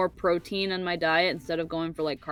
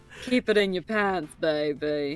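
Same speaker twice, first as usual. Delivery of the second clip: put-on British accent in a spy style. Showing others a British accent that they say is Austin Powers, use an Austin Powers voice. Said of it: "That's Austin Powers".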